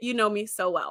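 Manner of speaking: usual speaking voice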